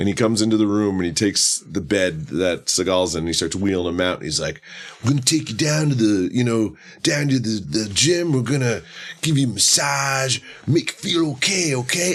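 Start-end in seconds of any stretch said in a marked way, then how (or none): 5.0-12.2 silly acted therapist voice, goofy and pitched up. Retelling a hospital therapist's line from a movie: imitating a goofy delivery. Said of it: "the way he said it".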